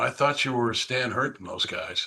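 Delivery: soft, hushed half-whisper. Retelling what the court reporter said in court: imitating someone whispering. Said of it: "kinda whispering".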